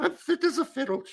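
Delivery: very high, piping voice. Retelling what she used to say about butter, doing a Julia Child impression. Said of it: "she would say".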